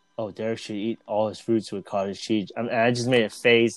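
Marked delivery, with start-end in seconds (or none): 0.2-2.6 hushed, soft half-whisper. Retelling what Sue just said: imitating Sue half-whispering. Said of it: "she was whispering".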